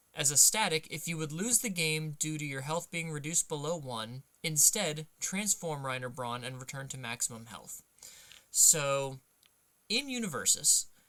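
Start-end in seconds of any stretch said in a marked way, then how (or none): none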